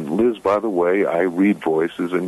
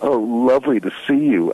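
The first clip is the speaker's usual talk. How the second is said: thick sarcasm, plainly insincere, drawn out, pitched high; 5 semitones higher than usual. Describing someone difficult greeting them at a party, imitating a sarcastic greeting. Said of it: "in a really sort of sarcastic tone".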